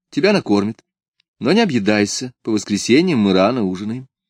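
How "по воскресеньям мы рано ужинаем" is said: ordinary delivery, nothing marked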